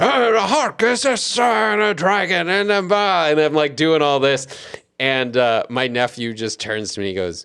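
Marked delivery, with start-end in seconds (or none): 0.0-2.5 acted yelling, much higher and slower. Retelling reading a story aloud to a nephew, voicing a character: retelling a loud yelled reading. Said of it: ""You're yelling."".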